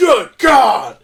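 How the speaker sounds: put-on announcer voice, exclaiming. Retelling a moment where someone fell through the ring: J R impression. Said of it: "J R goes".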